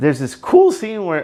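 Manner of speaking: high voice cracking mid-phrase. Recapping a tv episode, the speaker's voice cracks. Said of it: "ooh, that voice crack".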